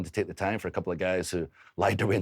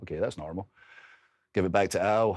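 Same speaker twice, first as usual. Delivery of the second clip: plain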